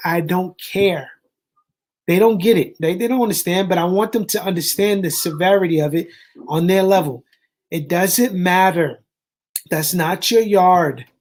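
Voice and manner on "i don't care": stern, firm delivery. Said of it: "I said it very sternly".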